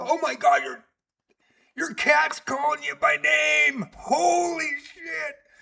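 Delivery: panicked shouting, high pitch. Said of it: "Regina freaked out because she goes".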